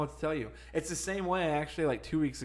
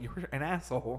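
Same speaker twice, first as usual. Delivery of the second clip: usual speaking voice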